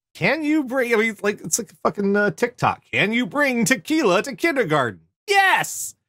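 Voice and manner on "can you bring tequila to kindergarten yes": higher-pitched, slower robotic app voice. Saying a question the way it would sound in a TikTok clip, in an annoying TikTok robot voice. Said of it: "I'm hearing it in that annoying TikTok voice".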